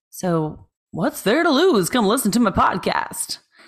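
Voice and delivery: poor fake Transatlantic accent. Speaker tries plugging their podcast in a put-on accent, bad Transatlantic accent. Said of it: "a bad one".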